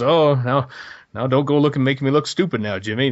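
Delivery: high, timid, put-on cowardly sheriff voice. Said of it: "the cowardly sheriff role that [name] has".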